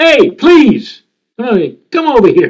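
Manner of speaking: loud, high hollering call-out yell. Retelling a comedian's story about a man on the street: imitating someone yelling out. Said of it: "so he yelled out".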